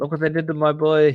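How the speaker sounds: put-on bad Italian accent. Quoting a line after the other speaker mentions an Italian accent, bad Italian accent. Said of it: "bad accent".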